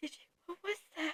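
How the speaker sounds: barely audible, very quiet horror-movie whisper. Retelling waking a friend after a scary movie, whispering. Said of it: "and I whisper".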